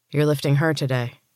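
ordinary delivery

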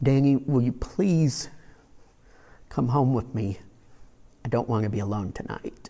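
gentle, really soft voice. Retelling what a man who had been crying said to him, in a really soft voice. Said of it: "he just said in a really soft voice".

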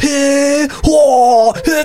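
put-on overacted exclamations. Imitating how people overact when excited: imitating overacted exclamations. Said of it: "when you watch Japanese people overact and they're always".

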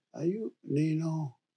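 put-on very quiet soft-spoken girl voice. Retelling how a neighbour greeted him: imitating a soft-spoken girl. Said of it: "Very, very soft-spoken girl".

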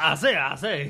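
loud, belted cartoon rooster voice. Joking about how a coworker sounded: Foghorn Leghorn impression. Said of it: "What is he, Foghorn Leghorn?".

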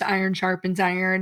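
ordinary talk, nothing marked

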